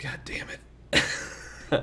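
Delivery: slow, whispered grumble under the breath. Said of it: "Jacob's like".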